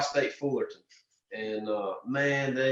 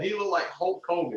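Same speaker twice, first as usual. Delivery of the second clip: normal talking voice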